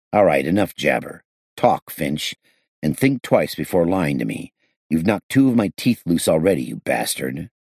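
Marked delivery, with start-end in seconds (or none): none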